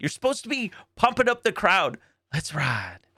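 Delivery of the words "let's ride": oddly soft, hushed, creepy, hyped-up half-whisper. Mocking a quarterback's hype line: imitating Russell Wilson half-whispering. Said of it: "why are you whispering?".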